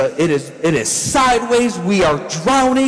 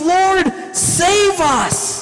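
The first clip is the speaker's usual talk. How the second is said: put-on, very high, frantic yelling crying out; 10 semitones higher than usual. Retelling how the disciples woke Jesus in the storm: acting out disciples yelling. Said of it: "They're yelling at Jesus".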